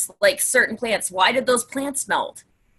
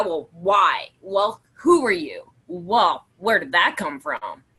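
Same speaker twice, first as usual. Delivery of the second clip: put-on pissed-off irritated teenage girl tone, slower; 4 semitones lower than usual. Speaker demonstrates asking questions the wrong way, in a pissed-off teenage girl tone. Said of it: "that's the tone thing. It's are you asking like sort of the seventeen year old pissed off girl".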